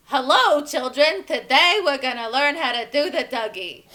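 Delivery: very loud, big, broad cartoonish teacher voice.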